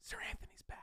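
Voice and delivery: very quiet whisper, close into the mic. Confiding something risky to the microphone: whispering. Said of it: "I might have to just whisper this into the microphone".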